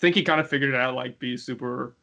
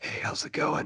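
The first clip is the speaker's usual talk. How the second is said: put-on phone-sex line voice, quieter; 6 dB quieter than usual. Asked to show a radio voice, the speaker greets listeners in a sex hotline voice. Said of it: "sex hotline voice".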